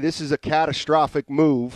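ordinary talk

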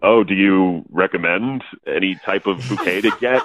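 forced, artificially deepened fake-deep register. Retelling asking a woman at a flower shop for advice: imitating own put-on deeper voice. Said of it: "Did your voice get two octaves deeper".

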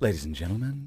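flat flight attendant PA announcement voice. Former cabin crew member, asked about plane announcements, shows one: flight announcement voice. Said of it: "Why do you have to put on that voice".

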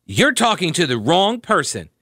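condescending, patronizing, superior tone. Retelling what a woman said back to the speaker: mimicking a condescending tone. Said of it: "With a condescending tone".

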